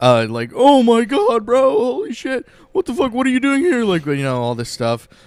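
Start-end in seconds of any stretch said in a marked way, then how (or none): 0.5-3.8 put-on very high, frantic, mind-blown Florida bro outburst. Retelling a friend's reaction on recognizing him: imitating a friend losing his mind. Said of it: "losing his mind".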